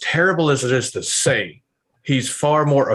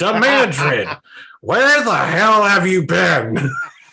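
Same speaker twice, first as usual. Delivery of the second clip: high, squeezed-up, pitched-up comic voice; 7 semitones higher, 4 dB louder than usual. Voicing the Dark One as asked for the scene: Gilbert Gottfried voice. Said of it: "Gilbert Gottfried as the Dark One".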